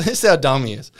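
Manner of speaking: ordinary delivery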